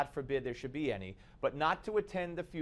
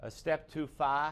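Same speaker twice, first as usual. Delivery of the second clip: very slow, drawn-out, put-on Boston accent. Repeating another man's phrase, mocking his accent: mock boston accent. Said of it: "I'm mocking his Boston accent".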